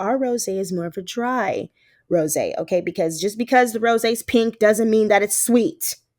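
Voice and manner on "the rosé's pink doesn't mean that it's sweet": ordinary talk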